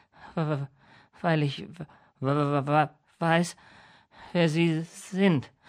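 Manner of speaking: very slow delivery, stammering throughout. Steve answers Mr. Crapsley, who asks why he gasped, stammering. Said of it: "stotterte Steve".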